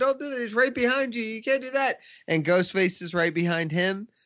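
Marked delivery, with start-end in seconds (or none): 0.0-2.0 yelling high. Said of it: "he's yelling at her".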